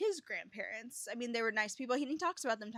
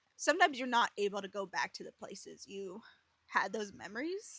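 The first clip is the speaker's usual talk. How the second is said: teary, welling up, close to crying; 2 semitones lower than usual. Giving advice about revisiting memories with grandparents, getting teary-eyed. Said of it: "I'm like getting teary eyed again".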